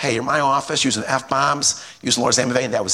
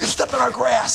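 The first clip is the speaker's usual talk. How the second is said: put-on very high-pitched, really mad, angry outburst; 11 semitones higher than usual. Telling a story about a dispute over someone's grass; imitating a really mad man. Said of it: "He's real mad about it".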